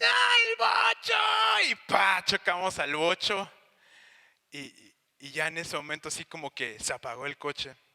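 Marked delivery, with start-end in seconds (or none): 0.0-1.7 mock very high, raspy, ragged, crazed frantic shriek. Retelling a car crash, quoting mom: imitating mom screaming wildly. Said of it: "mi mamá gritando como loca".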